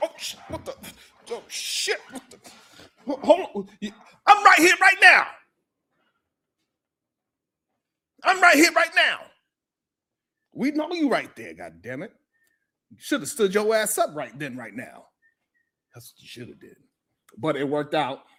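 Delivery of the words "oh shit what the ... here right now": mock startled whisper, breathy and stammering. Mocking someone who sat down when the other man stood: imitating someone caught off guard. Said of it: "you was like".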